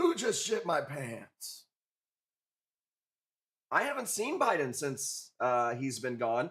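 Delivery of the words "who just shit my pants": swooping, sing-song put-on voice, pitch all over. Trying out an impression to see if it works: Biden impression. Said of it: "Let me do my impression of Biden".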